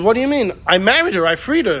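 ordinary talk, nothing marked

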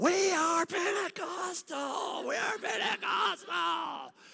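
very loud, very high, very slow, drawn-out scream. Retelling a pastor screaming at the top of his lungs: imitating a pastor screaming. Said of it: "screaming at the top of his lungs".

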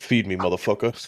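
put-on baby voice in a deep, low baritone. Joking with friends about a baby's first words, voicing Asher in deep baritone. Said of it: "Just have the most deep baritone".

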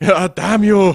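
bad put-on German accent. Voicing Red Skull being frustrated: terrible German accent as Red Skull. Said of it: "that's my terrible German accent".

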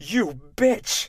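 high-pitched, startled, shocked outcry. After Ipomée taunts Amédée about his dead mother, the narrator gives a shocked cry. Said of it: "I cried, shocked".

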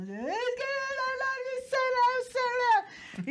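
put-on, very high, tearful wail, "no" stretched. Retelling what she answered when asked, imitating crying while talking. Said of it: "le hablo llorando".

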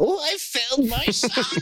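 put-on very high, cranky, angry old parent voice. Joking about his mom hearing his story, the speaker acts out her reaction; mock-angry old parent voice. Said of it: "I always just make them sound old and angry".

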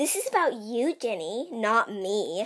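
put-on very slow, drawn-out, bratty voice. Describing how Siri answers when asked about herself, in a bratty Siri voice. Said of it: "it's a really bratty voice".

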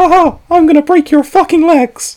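voice going way up, very high and loud. Asked to do a voice, the speaker does his usual Mickey Mouse voice. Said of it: "I always do like the Mickey Mouse voice from South Park".

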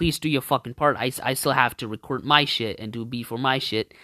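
plain

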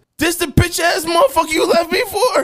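acted, very high-pitched, loud shouting yell. Retelling a confrontation with an ex, imitating own loud yelling. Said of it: "So I just kept getting loud".

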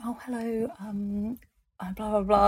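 hushed, soft, slow, extra-polite tone. Retelling going up to someone after a book signing: imitating own quiet polite talk. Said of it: "talking so quietly and being so polite".

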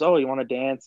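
plain

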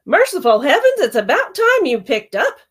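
blaring, high-pitched loud exclamation. A grandmother on the phone as her granddaughter finally picks up, blaring. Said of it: "Her grandmother's voice blared through the phone".

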